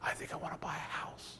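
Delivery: very quiet, secretive, leaned-in whisper. Retelling how a bank teller leaned over the counter: imitating someone whispering. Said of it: "why are we whispering?".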